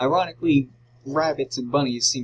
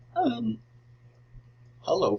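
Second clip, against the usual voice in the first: voice breaking up, cracking very high; 10 semitones higher than usual. Moving on to talk about Chica, voice cracking. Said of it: "voice crack".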